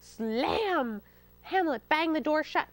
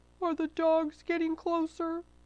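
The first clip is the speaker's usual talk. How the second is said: indistinct, mumbled words; 3 semitones higher than usual. Narrator reading the fox's question from inside a churn, mumbled. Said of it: "the fox mumbled from inside the churn".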